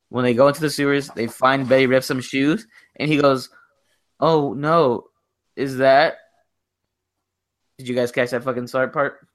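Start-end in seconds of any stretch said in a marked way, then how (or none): 4.2-6.2 mocking, badly delivered movie-line style. Retelling a movie scene, imitating Stan's badly delivered line. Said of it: "he had the worst delivered line".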